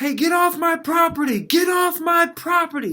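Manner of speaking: high, piercing shriek at full volume. Retelling a woman yelling at neighbor kids near her property: imitating someone screaming. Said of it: "she's screaming at them like".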